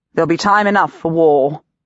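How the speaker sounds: ordinary delivery, nothing marked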